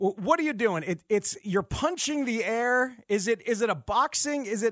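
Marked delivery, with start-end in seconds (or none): none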